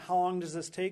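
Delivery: normal talking voice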